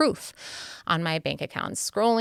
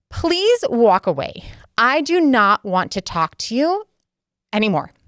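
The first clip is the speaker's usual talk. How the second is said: raised, high, unhinged crazy-lady voice; 6 semitones higher, 7 dB louder than usual. Retelling finally losing it in an argument at a trampoline park, crazy lady tone. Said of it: "in a kind of crazy lady tone".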